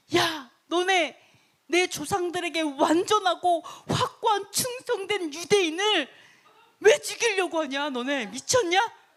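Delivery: high, slow, furious ranting outburst. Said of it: "화가 나가지고 막 승질을 내면서".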